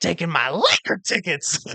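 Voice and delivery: high, swooping, angry and sore whine. Retelling a comic's joke about divorce, in a high-pitched Mel Gibson voice. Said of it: "in the high pitched Mel Gibson voice".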